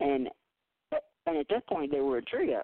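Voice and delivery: cracking voice. Introducing a duo's new single, voice cracking. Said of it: "And my voice is cracked".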